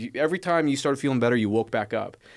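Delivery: ordinary talk, nothing marked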